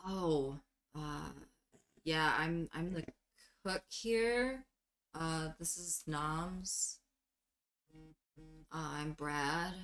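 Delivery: subdued, retreating, mellowed-out voice, bravado gone. Voicing a cook whose confidence drops when asked about disappearances: mellowed-out, withdrawn voice. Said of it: "mellows out and kinda retracts to himself and goes".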